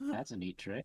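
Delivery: wry side remark, half to himself. Voicing a character reacting to a trick: muttered under his breath. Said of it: "under his breath".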